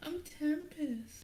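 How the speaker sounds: very high, hushed, shy voice, tiny and barely audible. Role-playing introductions, saying the character's name: shy Tempest girl voice. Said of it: "your girl voice is very shy".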